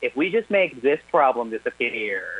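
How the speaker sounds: ordinary talk, nothing marked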